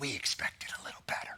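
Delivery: low, hushed whisper. Addressing a region whose borders the west drew, whispering.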